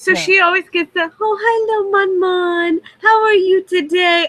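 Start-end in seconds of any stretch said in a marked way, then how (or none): 1.2-4.3 put-on high, doting baby-talk voice. An owner shows how she always talks to one of her dogs: baby talk to a dog. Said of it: "I baby talk to all of them".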